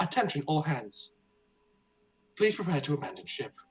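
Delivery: soothing, calm female announcer voice. Playing out a ship emergency, voicing the announcement: calming female announcer voice. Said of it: "a calming female voice say".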